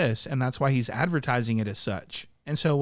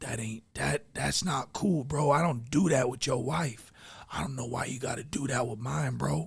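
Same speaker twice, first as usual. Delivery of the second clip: acted-out frightened, whimpering little voice; 5 dB quieter than usual. Reacting to something he saw, imitating Whack Three Fingers whimpering. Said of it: "He sounds so whimpery and so scared".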